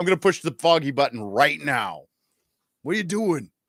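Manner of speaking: very loud high shout. Imitating an actor in his Punisher role: Punisher impression. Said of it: "that was not a bad impression".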